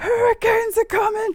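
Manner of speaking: very loud, high-pitched, urgent alarmed yelling. Voicing someone on the ship spotting a storm at dawn: yelling a warning. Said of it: "until you hear someone yell".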